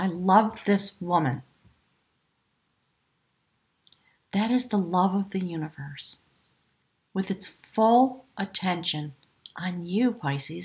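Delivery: choked-up, emotional, catching voice. Reading a tarot card for Pisces, getting choked up. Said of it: "now I'm getting choked up".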